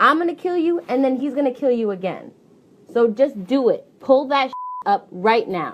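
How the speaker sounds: hard, threatening, menacing gangster voice. Threatening someone on a recording to show evidence: threatening like a gangster. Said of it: "that sounds like a gangster to me".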